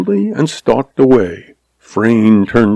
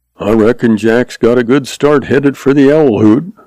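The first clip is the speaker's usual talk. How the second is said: ordinary delivery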